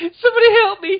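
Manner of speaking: mock high, loud, feminine-sounding sobbing.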